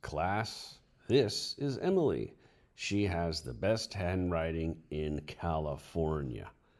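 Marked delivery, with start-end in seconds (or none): none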